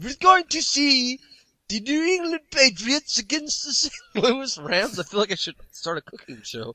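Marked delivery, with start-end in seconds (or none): 0.0-5.0 clumsy fake Swedish accent, very high and slow. Previewing a London game, the host slips into a bad Swedish Chef accent. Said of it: "you're starting to sound".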